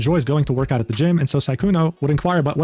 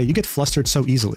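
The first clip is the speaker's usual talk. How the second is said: normal talking voice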